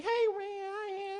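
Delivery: put-on very high little-kid voice. Telling a story, the speaker repeats what he heard, imitating a little kid's voice. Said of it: "I hear like a little kid's voice".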